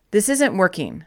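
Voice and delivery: ordinary talk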